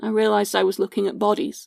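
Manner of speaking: ordinary talk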